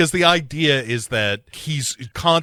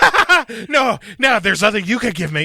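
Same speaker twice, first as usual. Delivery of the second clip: manic, very high-pitched and loud; 11 semitones higher, 5 dB louder than usual. Retelling a film scene, quoting Nicolas Cage's reply: imitating Nicolas Cage manic. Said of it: "he's just real manic, like he's strung out".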